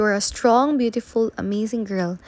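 plain

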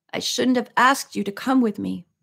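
ordinary delivery

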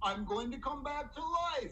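usual speaking voice

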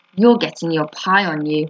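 plain

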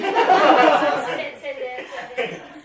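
loud, slow, laughing delivery.

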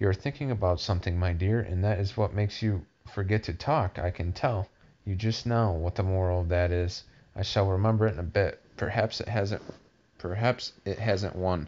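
ordinary delivery

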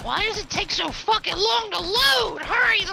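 fed-up, furious, loud, high angry ranting outburst. Speaking as Tally, just before someone asks why Tally is so angry today. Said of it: "why are you so angry today?".

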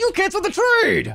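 loud voice. Accusing another player of canceling the trade: raised voice. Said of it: "Stop raising your voice at me".

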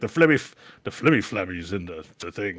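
put-on Irish accent. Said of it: "eight British, Irish words".

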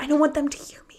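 hushed stage half-whisper. Retelling phone calls made from a silent stadium: imitating own half-whisper.

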